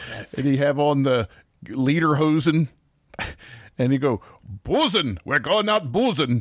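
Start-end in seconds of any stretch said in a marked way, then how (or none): 4.6-6.4 put-on ghostly voice with a German accent. Joking about a ghost in lederhosen going out boozing: German ghost voice. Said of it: "He'd be like a German ghost".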